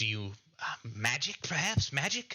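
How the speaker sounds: thrilled, eager, excited sing-song delivery. Voicing a woman who sizes up the listener and asks about magic: excited. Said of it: "very excited at the prospect of magic".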